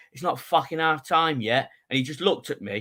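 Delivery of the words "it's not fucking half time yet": acted irritated, fed-up, angry voice, pitched up. Retelling snapping at a man leaving early: retelling an angry retort. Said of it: "I was so pissed off. I was like".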